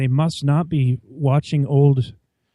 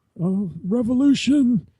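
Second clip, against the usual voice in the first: very high, shrill, pitched-up yell with spit flying; 9 semitones higher than usual. Retelling another's impression of Bernie Sanders: yelling Bernie Sanders impression. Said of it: "He had the yelling".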